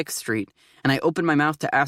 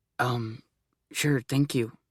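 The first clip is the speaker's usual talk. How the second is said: near whisper, lower and quieter; 3 semitones lower, 5 dB quieter than usual. Thanking a ticket clerk after losing the prize: almost a whisper. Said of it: "His voice is almost a whisper".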